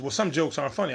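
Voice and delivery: ordinary talk, nothing marked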